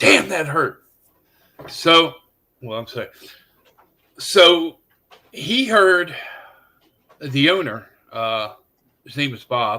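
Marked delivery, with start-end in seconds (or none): 0.0-0.8 sudden, loud hollered outburst. Retelling a buddy's reaction to being hit by a rock: imitating someone yelling. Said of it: "and he yelled".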